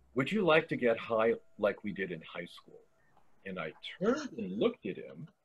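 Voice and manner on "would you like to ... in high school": mock calm voice, lower and quieter. Retelling what the man behind the booth said to her, the speaker imitates a calm voice. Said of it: "And he calmly says".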